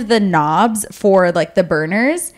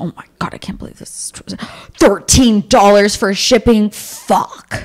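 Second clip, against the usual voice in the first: slow, grumbling, grousing voice, muttered to himself. Retelling how a man reacted while paying for shipping, imitating someone grumbling. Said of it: "he's grumbling to himself".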